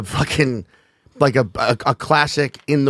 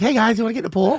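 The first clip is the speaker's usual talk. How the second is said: put-on very high, unbroken young boy's voice; 10 semitones higher than usual. Quoting what a boy said at fifteen; imitating a pre-puberty voice. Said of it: "your voice hadn't gotten groggly yet".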